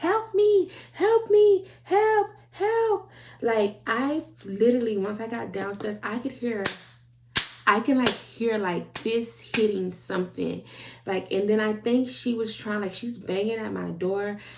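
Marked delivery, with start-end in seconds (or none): 0.0-3.1 mock very high, slow, drawn-out yelling cry. Retelling what a neighbor was yelling, acting out a yell at the top of her lungs. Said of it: "She's yelling at the top of her lungs".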